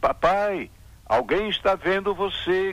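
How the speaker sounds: put-on high, loud, shouted childlike cry. A child calls out again to his father as the man steals wheat, shouted. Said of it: "gritou a criança de novo".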